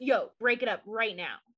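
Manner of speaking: put-on very serious, authoritarian stern voice. Retelling how a mom broke up a kids' fight, imitating Ella, very serious and authoritarian. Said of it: "she was very serious, very authoritarian".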